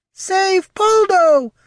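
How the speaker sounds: loud, very high voice warping with enthusiasm. A narrator reads a strange figure's exclamation in a high, warping, enthusiastic voice. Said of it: "its voice high and warping with sudden enthusiasm".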